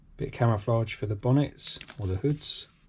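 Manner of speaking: ordinary talk, nothing marked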